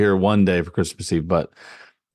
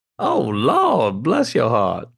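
put-on old woman voice, drawn-out 'lawd', much higher; 5 semitones higher than usual. Recalling a grandmother's saying, a speaker imitates her drawn-out 'Lawd'.

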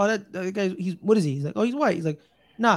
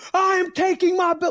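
mock boxer yelling, higher; 11 semitones higher, 4 dB louder than usual. Retelling a boxer yelling at a rival in the crowd: imitating Charlo yelling. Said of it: "yelling at Tony Harrison".

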